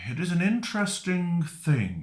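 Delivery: little voice. Voicing an unseen figure speaking from over someone's shoulder: little voice. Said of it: "a little voice from over your shoulder going".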